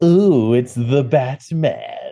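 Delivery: drawn-out sarcastic villain voice. Playing the villains as game master, saying the Batman: a little Mark Hamill voice. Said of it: "Giving me a little bit of Mark Hamill".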